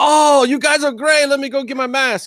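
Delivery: put-on very high Japanese accent, laid on thick. Retelling what someone said on meeting them: imitating with a Japanese accent. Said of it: "how do you turn Japanese".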